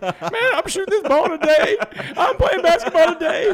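very high, very loud, cracking tough-guy bravado. Retelling what he said on the basketball court, putting on a squeaky, cracking tough voice. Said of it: "in the toughest voice I could find squeaking and cracking".

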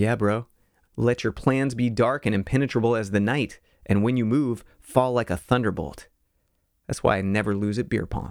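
ordinary delivery

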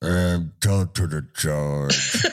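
low, very slow, dragging mumble. Describing a conversation, the speaker acts out a man's reply, imitating someone mumbling. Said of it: "he mumbles like".

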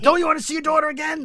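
very high, shrill, loud screaming taunt. Retelling a scene where one man screams at another, retelling a taunting scream. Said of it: "he's screaming at him".

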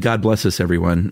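ordinary talk

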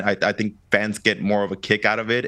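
plain

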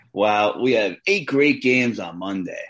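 a little sarcastic, slow, with fake enthusiasm. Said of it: "I'm being a little sarcastic".

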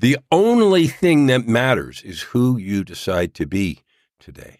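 very slow, deliberate delivery, each word laid down. Speaker addresses listeners, deliberately saying it slowly. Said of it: "I'm saying this slow so people will understand".

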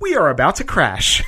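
even, unruffled, calm flight attendant voice. Retelling a dream of a crashing plane's announcement, mimicking a calm flight attendant voice. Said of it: "in the calm flight attendant voice".

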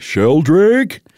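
loud shouted word. Saying a name that seems like it should be yelled, yelled Sheldrake. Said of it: "seems like it should be yelled at like that".

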